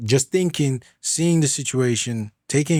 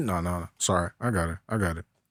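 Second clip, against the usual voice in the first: very calm, low, soft stoic voice. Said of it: "Just very calm, stoic".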